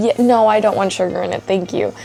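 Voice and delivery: normal talking voice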